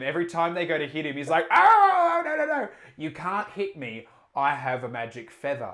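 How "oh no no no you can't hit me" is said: panicky, loud, swooping shouting. Telling a story about a man, act out him yelling at the things in front of him. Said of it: "he's just yelling at the things".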